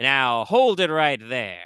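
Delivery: big booming voice, slow, loud and drawn out. A narrator voices a figure calling out in a scene, in a big booming voice. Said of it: "a big voice, you know, kind of kind of boom out".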